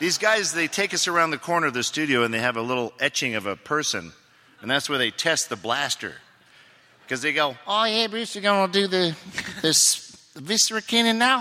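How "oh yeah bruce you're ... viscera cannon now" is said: put-on high-pitched New Zealand accent. Actor retelling what the studio crew said before testing the blaster; new zealand accent. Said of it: "the crew members all talk exactly like that".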